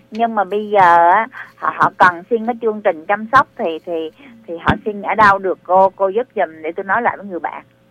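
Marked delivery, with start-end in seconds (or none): 5.9-7.6 fast, hurried speech. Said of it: "bà nói chậm chậm lại nha".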